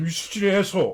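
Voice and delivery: furious put-on outburst. Retelling a comic scene where one character yells at another, retelling an angry yell. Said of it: "he's just yelling at him".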